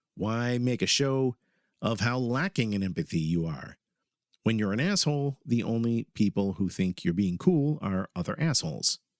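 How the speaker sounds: usual speaking voice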